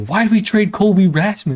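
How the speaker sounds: put-on very high little-kid voice, like an eight-year-old. Imagining Tony La Russa's young son speaking up; imitating an eight-year-old kid. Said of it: "this like eight year old, nine year old".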